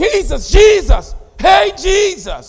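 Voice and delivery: put-on loud shout. Retelling the disciples waking Jesus in trouble: imitating a loud cry. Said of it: "he cries out with a loud voice".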